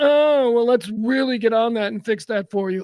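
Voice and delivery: catty, sugary, fake-sweet, passive-aggressive service tone. Acting out a passive-aggressive guy at Starbucks: mock passive-aggressive tone.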